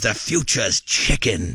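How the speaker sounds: grand, rich, slow, big put-on English accent. Retelling what a business partner said about chicken: imitating a big, rich English accent. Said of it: "He's got this big, rich English accent".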